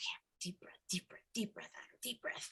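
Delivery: put-on upset, strained, self-soothing whisper. Retelling overheard self-talk of a boy getting upset: imitating someone upset. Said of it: "I could hear him getting upset".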